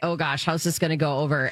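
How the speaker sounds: ordinary delivery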